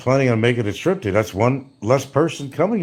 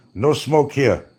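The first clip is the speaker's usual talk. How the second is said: stripped-down broken English with words dropped. Retelling an official fining him for smoking: imitating an official's broken english. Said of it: "I'm sounding more like [name]".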